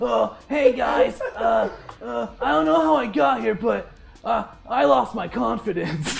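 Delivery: put-on cartoon boy voice. Voicing a captive character tied to a tree post: Milhouse voice. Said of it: "tied to a tree post is Milhouse from The Simpsons".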